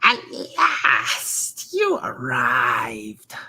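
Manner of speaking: put-on crackling old crone voice. Voicing a hunched figure at a crystal ball greeting you, in a crackling crone voice. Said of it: "her voice crackles like dry weeds".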